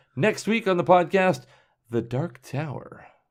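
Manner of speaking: livelier, expressive read with strong inflection. Redoing an episode announcement on request: redone with better inflection. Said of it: "Was that good inflection? You want me to do it again?".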